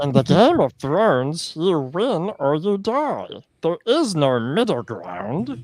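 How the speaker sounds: loud, high-pitched creature voice with swinging pitch. Trying a requested line as best as possible, Gollum voice. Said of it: "I'll try this in Gollum's voice".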